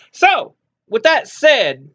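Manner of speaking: full-on high, screaming yelling. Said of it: "don't know why I'm screaming".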